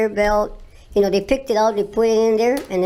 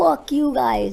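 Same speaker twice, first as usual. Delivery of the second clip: put-on scream, pitched higher; 3 semitones higher than usual. Retelling being stared at in the airport: retelling own screaming. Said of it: "I started screaming, like".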